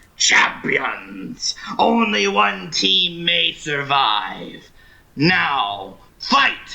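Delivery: growling, snarling announcer voice, drawn-out now. Voicing a voice that rises from all around the listeners; loud snarling voice. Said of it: "a loud, snarling voice rises from all directions".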